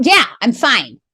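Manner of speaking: mock nasty, curt snap. Retelling a reply to a stranger who asked if all was well: imitating a cruel snap. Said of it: "I snapped at her, like, cruelly, like, nasty".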